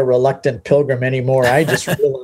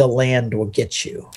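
mock muttered aside, under the breath; 5 dB quieter than usual. Speaker retelling what he said about the woman joining the trip, under his breath. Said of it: "And under my breath".

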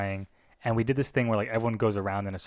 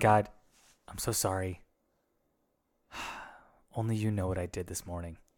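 put-on near-weeping voice, quieter; 4 dB quieter than usual. Retelling a kid's turn to speak, the speaker imitates him near weeping. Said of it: "he was like borderline weeping".

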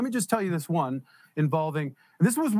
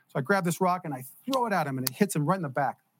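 usual speaking voice

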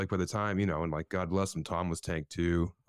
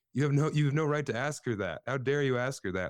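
mock high-pitched yell; 7 semitones higher than usual. Retelling how his wife yelled from the crowd: imitating someone yelling.

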